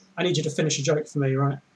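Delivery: ordinary delivery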